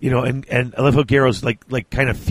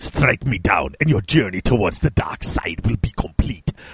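put-on old villain voice, pitched lower; 3 semitones lower than usual. Trying out a voice for the old man Malkador, speak to Garrow in a Star Wars Emperor voice. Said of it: "the Star Wars Emperor".

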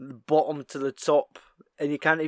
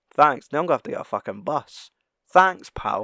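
put-on deadpan reaction; 4 dB louder than usual. Retelling a film scene's reaction line, imitating Mike Haggerty's deadpan line. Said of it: "Just with his deadpan reactions".

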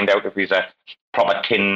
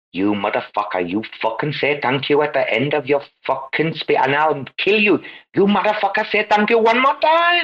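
heavy, exaggerated, high, swooping Indian accent; 7 semitones higher than usual. Retelling the man threatening a speaker: imitating Kumar with Indian accent. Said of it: "he plays the stereotypical, uh, Indian".

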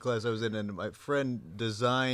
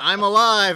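high, loud broadcast scream. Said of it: "he got on air and screamed".

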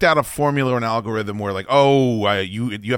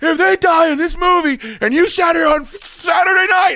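mock screaming, higher and louder; 5 dB louder than usual. Retelling a movie night, imitating someone screaming. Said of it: "screaming at me".

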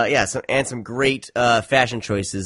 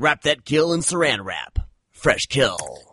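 pitched-up, dramatic B-movie trailer narrator voice; 7 semitones higher than usual. Saying a film title on request: Grindhouse trailer announcer voice. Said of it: "you could totally be a replacement for the Grindhouse, uh, trailer dude".

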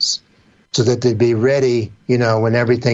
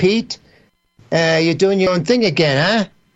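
put-on New York accent, much higher and faster; 7 semitones higher than usual. Recalling how a New Yorker at the studio used to talk to the speaker, imitating Doug Wiley. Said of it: "Doug Wiley used to talk to me like this".

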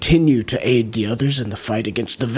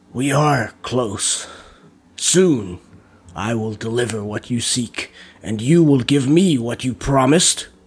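distinct, ethereal tones, each word clear. Narrator reading a sorcerer speaking through a channel he has conjured, in distinct, ethereal tones. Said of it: "with distinct yet ethereal tones".

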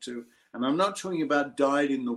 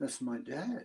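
very hushed, soft, incredulous tone; 9 dB quieter than usual. Father retelling his daughter telling her friends who he is, mock-incredulous, retelling daughter. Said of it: "in an incredulous voice".

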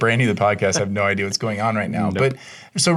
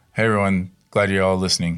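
mock-unenthusiastic voice, pitched much lower; 3 semitones lower than usual. A podcast host repeats his co-host's greeting back to him, mimicking Robbie's unenthusiastic greeting. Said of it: "You didn't sound very enthusiastic there".

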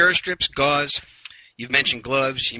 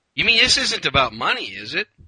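dry sarcastic jab. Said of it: "Sorry to be sarcastic there".

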